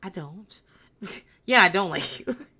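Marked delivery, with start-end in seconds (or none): 0.0-0.6 sweet, dulcet, movie-style tones. Retelling how Sheree quietly answered: imitating Sheree speaking quietly. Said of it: "she just quietly says".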